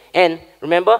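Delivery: ordinary delivery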